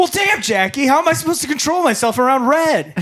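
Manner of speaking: very high-pitched, shrill shouted outburst. Playing Michael in a skit, answering Jackie: yelling at girlfriend in character. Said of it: "are you yelling at your girlfriend?".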